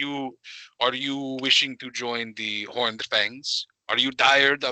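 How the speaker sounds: put-on Russian accent. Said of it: "Is this what you want me to speak like".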